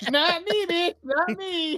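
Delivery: high-pitched, frantic yelling. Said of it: "Stealthy said".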